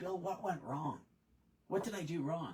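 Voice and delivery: near-tearful, pleading voice on the edge of crying. Retelling what a young guy asked after a lost sale: imitating someone almost in tears. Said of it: "he came over to me almost in tears".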